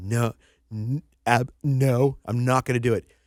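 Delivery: loud, slow, stumbling sobbing. Retelling someone refusing a recruiter's offer: imitating someone crying. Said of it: "she starts crying, and she goes".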